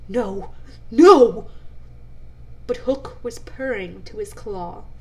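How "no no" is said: very loud, cringing, cowering cry. Cecco, ordered back by his captain Hook, answers: cowering, crying out. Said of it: "cowered before his captain, crying".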